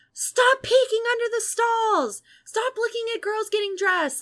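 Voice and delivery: play-acted, high, shrieked screaming. Retelling how the dad's girlfriend screamed in a full bathroom: imitating a woman screaming. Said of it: "she starts screaming in a full bathroom".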